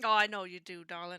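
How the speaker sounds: put-on American Southern accent. Reassuring a worried partner in character: southern accent. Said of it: "I said darling in a southern accent".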